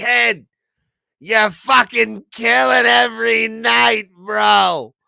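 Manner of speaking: put-on very high, very loud, raspy Long Island accent. Imitating Terry McNeely as a New York manager: Terry McNeely's Long Island accent. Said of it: "has the Long Island accent, and he's raspy".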